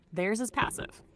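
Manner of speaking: ordinary delivery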